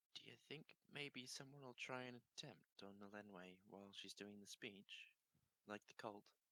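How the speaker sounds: confiding, hushed half-whispered stage whisper. A character leans over to Vorik to ask him something, half-whispering.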